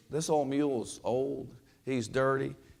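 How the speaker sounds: normal talking voice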